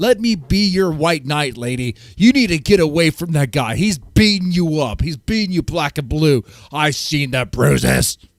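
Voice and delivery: loud screaming at full tilt. Acting out how someone screams at a person: imitating someone screaming. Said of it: "be screaming at her".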